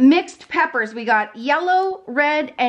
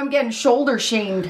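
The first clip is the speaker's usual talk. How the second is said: ordinary talk, nothing marked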